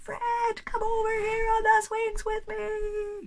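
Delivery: very loud, high calling voice. A teacher shows students how a very loud outdoor voice sounds. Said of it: "if you were using that very loud voice".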